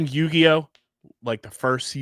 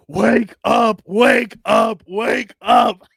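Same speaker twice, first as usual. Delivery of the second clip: very slow, loud, drawn-out preacher-style yelling; 9 semitones higher, 7 dB louder than usual. Podcast hosts joke about late-night tv preachers; imitating one yelling. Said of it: "Just yelling at you".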